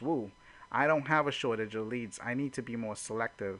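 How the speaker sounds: usual speaking voice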